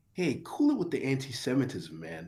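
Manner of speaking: swooping, animated, dramatic film-style delivery. Quoting a movie line to others: Patrick Bateman voice. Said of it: "you hit them with the, with the fucking, um, Patrick Bateman".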